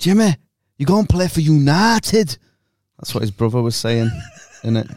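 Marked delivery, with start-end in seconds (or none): 0.0-2.3 put-on accent from Sheffield. Quoting a line from Full Monty, in a Sheffield accent. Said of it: "Was that Sheffield accent?".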